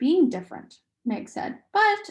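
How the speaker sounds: ordinary delivery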